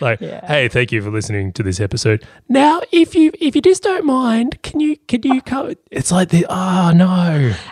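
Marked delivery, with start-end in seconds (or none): 0.4-5.7 hesitant, stumbling, awkward sing-song delivery, pitched up. Mimicking podcasters reaching the selling part of an episode, in a mock selling voice. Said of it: "their voice changes".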